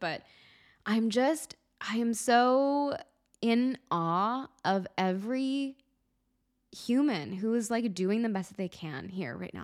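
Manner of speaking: slow, tearful voice on the edge of crying. Recording an episode for listeners, speaking on the verge of tears. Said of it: "I'm actually going to start crying".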